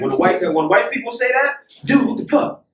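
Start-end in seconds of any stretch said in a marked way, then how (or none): 1.8-2.5 mock aggressive tone, pitched higher. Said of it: "in that aggressive tone".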